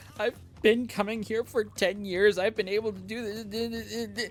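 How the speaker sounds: high, drawn-out, pleading voice on the edge of tears. Retelling someone who had come for ten years screaming at her, retelling a scream, almost crying. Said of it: "almost crying at me".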